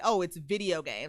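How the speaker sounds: ordinary delivery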